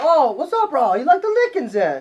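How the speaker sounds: put-on Hawaiian pidgin accent. Trying to get to their level, the speaker talks in a Hawaiian accent. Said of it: "say it like in an".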